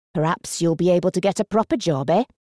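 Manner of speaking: usual speaking voice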